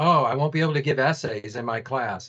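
ordinary delivery

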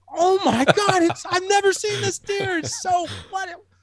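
fake excitement, very high-pitched and drawn out. Retelling watching a video beside a housemate, the speaker recalls pretending: faking excitement. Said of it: "I was like faking all this excitement".

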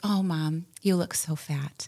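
put-on drawn-out, sweet, adoring little girl voice. Retelling what a three-year-old daughter said about a coat: imitating Jasmine, adoring. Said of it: "with just adoration in her eyes".

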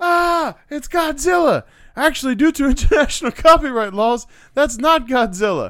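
high, loud, panicked yell.

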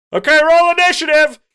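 loud high-pitched yelling. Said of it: "like, yelling".

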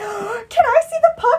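very high, loud, gushing, eager, excited voice. Recounting a woman coming in to see the puck, acting out her loud enthusiasm. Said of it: "she's loud, and she's so enthusiastic".

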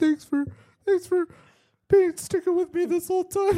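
fake tearful crying in a very high, weepy voice. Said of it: "Right when you start crying".

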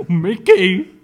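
very loud, silly, goofy cartoon-dog voice. Told he does a good Goofy impression, the speaker does a Goofy voice. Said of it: "[name] does a pretty good Goofy impersonation".

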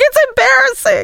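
put-on high-pitched, embarrassed kid voice. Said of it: "He's like".

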